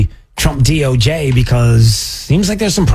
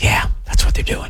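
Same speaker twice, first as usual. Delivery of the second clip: hushed whisper, much quieter. Agreeing with what another speaker just described, whispering. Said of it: "And I don't know why I'm whispering".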